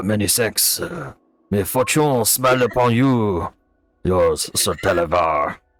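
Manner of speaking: put-on French accent. Reading aloud the note left on a gift, in a french dragon accent. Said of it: "I gotta do the accent".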